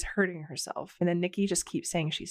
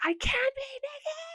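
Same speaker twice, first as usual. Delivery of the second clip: shrill, very high shrieking. Retelling an argument, quoting her shriek in his face: imitating a shriek. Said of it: "she shrieks in his face".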